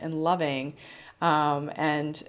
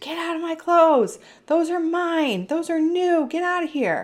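put-on very high, loud, shrieking child scream; 13 semitones higher, 6 dB louder than usual. Acting out how a daughter would have reacted: imitating a child screaming. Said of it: "would have screamed".

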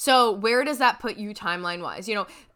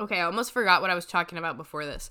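plain

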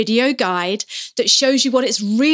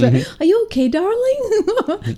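put-on very high, slow Irish accent; 10 semitones higher than usual. Retelling what a woman said to a little girl, accidental Irish accent. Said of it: "Sounding Irish there".

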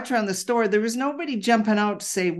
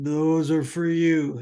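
deep voice sunk way down low; 4 semitones lower than usual. Speaker retells a voice she heard while reading a deck for her mom: booming low voice. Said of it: "in what I referred to as a booming voice and literally dropped in pitch to be low".

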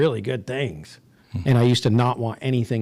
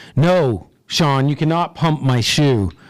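deliberately loud, slow, play-acted shout; 3 semitones higher, 4 dB louder than usual. Recalling being embarrassed by a guy's answer, retelling a loud shout. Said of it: "in his loudest voice that he could just to embarrass me".

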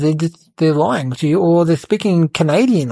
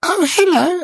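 squeaky, very high disguised voice; 12 semitones higher than usual. Retelling greeting someone while in disguise: voice a little higher. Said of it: "tried to speak with my voice a little higher".

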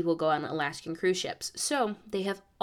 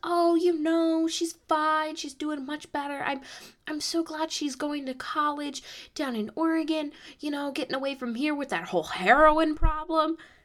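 put-on, very high, very loud, carrying chatter; 9 semitones higher than usual. Retelling a woman answering across the bus: imitating someone talking very loud. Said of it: "very, very loud".

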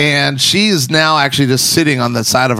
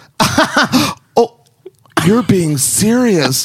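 high, very slow, amused, laughing voice; 7 semitones higher than usual. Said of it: "She laughed".

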